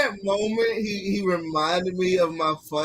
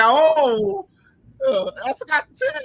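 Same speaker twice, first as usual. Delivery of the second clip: put-on talking through laughter, higher and louder; 14 semitones higher, 6 dB louder than usual. Retelling what she said on the phone about tickets: imitating her laughing while talking. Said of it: "And she was all laughing".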